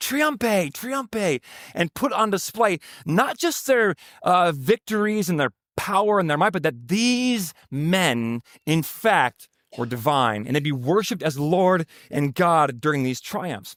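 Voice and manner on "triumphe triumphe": many voices shouting. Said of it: "they would shout".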